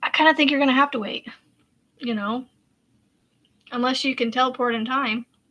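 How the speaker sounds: ordinary talk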